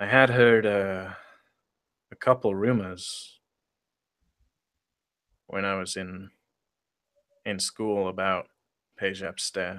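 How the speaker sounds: muttered quietly under the breath. Voicing a character answering someone who leaned in close: under his breath. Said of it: "kind of under his breath".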